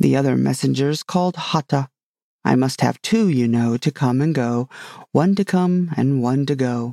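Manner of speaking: ordinary delivery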